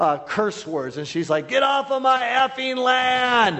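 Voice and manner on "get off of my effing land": high, slow yelling. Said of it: "she starts yelling these, curse words".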